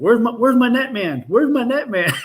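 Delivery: mock yelling, very high-pitched and shouted. Retelling a fishing moment, calling to his son for the net: imitating himself yelling. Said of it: "I'm yelling at him".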